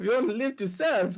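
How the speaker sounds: put-on French accent. Slipping into the other player's character accent: Lumiere-style French accent. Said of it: "your accent just carried over to mine".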